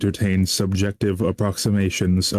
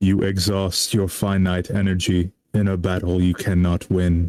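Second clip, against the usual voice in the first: level, flat, expressionless monotone reading. Performing a line right after saying here we go: flat monotone. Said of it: "I'll probably do like a kind of like monotone voice here".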